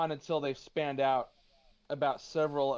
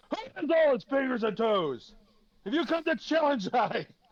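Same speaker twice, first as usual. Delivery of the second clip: loud, booming, high-pitched bellow; 11 semitones higher, 5 dB louder than usual. A game narrator voices an unseen figure shouting down from above, in a loud booming voice. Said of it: "And you hear a loud booming voice".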